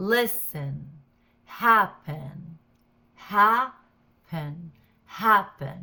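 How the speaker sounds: loud stress on first syllable of listen, happen. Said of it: "the stress is on the first syllable".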